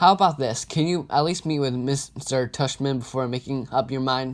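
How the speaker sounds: plain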